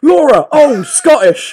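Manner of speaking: shrill, booming, very high, very loud shout. Recounting watching laura on tv, the speaker reenacts calling out to her, retelling a shout. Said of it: "And I shouted".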